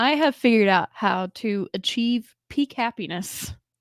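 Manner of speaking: giggles breaking into every word, laughing through. Starting to share news with a friend, laughing while talking. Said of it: "I can't even say it without laughing".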